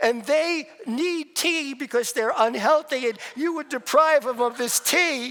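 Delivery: put-on indignant yelling. Retelling a haggling argument over tea with the seller: retelling indignant yelling. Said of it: "we're just yelling at each other".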